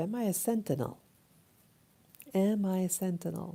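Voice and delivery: ordinary delivery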